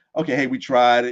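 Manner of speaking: normal talking voice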